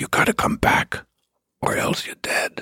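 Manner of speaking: put-on whispering voice. Retelling how a man in a trench coat threatened: imitating a whisper. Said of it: "he whispers into my ears".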